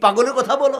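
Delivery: high, loud, scornful, scoffing tone.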